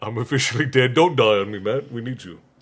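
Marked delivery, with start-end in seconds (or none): none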